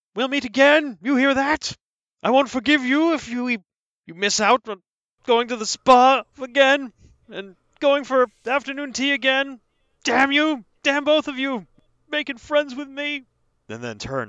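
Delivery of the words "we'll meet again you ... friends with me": very high-pitched, shouted in-character yell. Playing a character fleeing through a forest, yelling back to companions: yelling in character. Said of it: "I'm gonna yell out".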